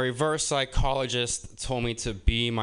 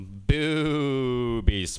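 put-on immature, childish ghost voice. Doing an impression of an immature ghost: immature ghost impression. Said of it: "Here's my impression of an immature ghost".

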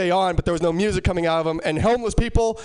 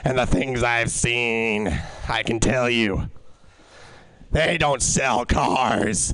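low, slow raspy voice of a world-weary madman. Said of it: "Talk like raspy madman secretary who has seen all".

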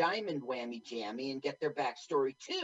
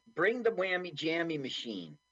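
ordinary talk

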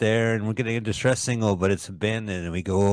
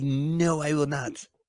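slow, full, put-on Brooklyn accent; 5 semitones higher, 4 dB quieter than usual. Teasing the other person, quote them back imitating a Brooklyn accent. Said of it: "the brawl of your Brooklyn accent".

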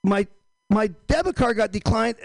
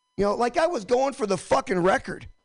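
plain

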